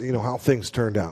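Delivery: ordinary delivery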